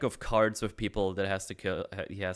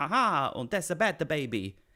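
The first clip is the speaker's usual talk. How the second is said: silly, goofy, funny comic creature voice; 7 semitones higher than usual. Retelling what the Babu Fricks say to Baby Yoda: Babu Frick voice. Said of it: "It sounds funny, like, the voice line".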